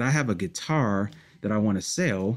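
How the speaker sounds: usual speaking voice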